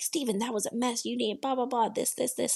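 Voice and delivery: play-acted, cutting, harsh judging tone. Retelling a judge's critique of a contestant: imitating harsh criticism. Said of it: "Bruno is being really harsh".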